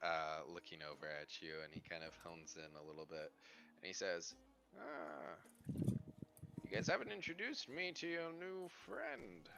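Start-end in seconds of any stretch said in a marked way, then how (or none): 4.8-9.5 put-on old wizard character voice. Voicing an old wizard who asks to meet a new friend: old wizard voice. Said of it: "this old wizard".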